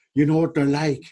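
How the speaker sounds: imitated, put-on Irish accent. Recalling how Dermot answered when told to get on, Dermot's Irish accent. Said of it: "And in his Irish accent".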